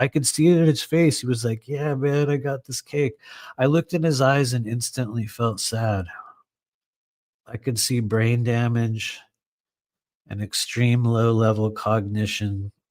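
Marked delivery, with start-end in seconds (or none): 1.7-3.1 mock stoked, excited voice, higher. Retelling a man offering cake, imitating a stoked guy. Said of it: "he was actually very stoked".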